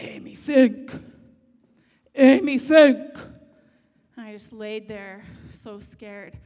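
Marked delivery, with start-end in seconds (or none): 0.0-3.2 very loud, deep, booming voice. Retelling a voice that woke a sleeping child: deep voice from the heavens. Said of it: "this deep voice from the heavens".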